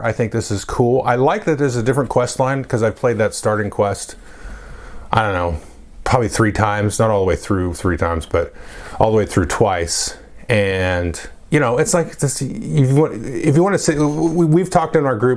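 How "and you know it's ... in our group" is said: halting stutter, repeated false starts, stumbling over words. Talking about playing with the group, the speaker stutters a little. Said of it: "excuse me for stuttering a little bit there".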